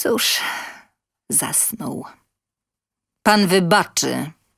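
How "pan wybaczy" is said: curt, gruff and brusque. Excusing himself to the helper before pulling her away, gruff. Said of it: "powiedział szorstko".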